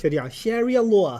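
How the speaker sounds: put-on New York accent. Recalling how John pronounced a phrase, imitating John's New York accent. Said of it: "Like a New York accent with it too".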